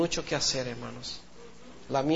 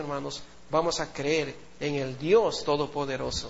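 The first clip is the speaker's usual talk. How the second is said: ordinary delivery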